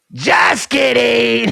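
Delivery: high, loud, creaky mock shout.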